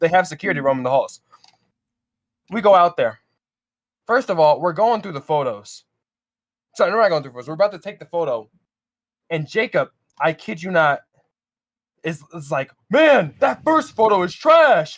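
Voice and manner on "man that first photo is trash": acted out, blurted very loud, drawn-out, high. Retelling how a friend spoke during a whispered hallway photo: imitating someone saying it loudly. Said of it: "Just says it as loud as possible".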